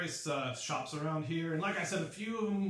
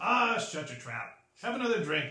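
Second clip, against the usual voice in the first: put-on old dwarf voice, louder; 3 dB louder than usual. Narrating a bar scene, the speaker voices the old dwarf replying: old dwarf voice. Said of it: "And the old dwarf says".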